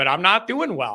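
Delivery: ordinary delivery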